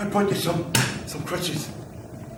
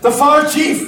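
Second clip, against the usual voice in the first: high, loud calling out. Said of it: "Stop shouting".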